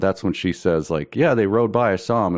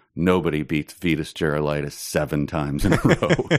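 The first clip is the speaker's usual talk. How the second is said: put-on deadpan, dry delivery; 3 semitones lower than usual. Retelling how a man answered repeated defeats, the speaker quotes him: imitating a dry remark. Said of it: "he very dryly said one time".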